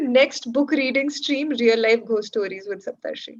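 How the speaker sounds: normal talking voice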